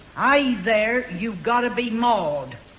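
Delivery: loud, put-on American accent. Telling someone what the woman upstairs said to her, Yankee Doodly American voice. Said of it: "in a Yankee Doodly sort of voice".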